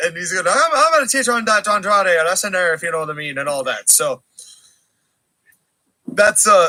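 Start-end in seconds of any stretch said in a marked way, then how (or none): 0.5-3.4 fast, goofy wrestling promo voice, rattled off quickly. Retelling a wrestling promo in a goofy Finn Balor impression. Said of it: "that's the Finn Balor promo".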